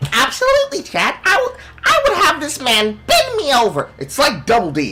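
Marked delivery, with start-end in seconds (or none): 0.1-3.9 put-on woman's voice, very high and swooping. Trying an impression the speaker says he can't do: imitating her voice. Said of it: "I can't do her voice right now... but I'm gonna try anyways".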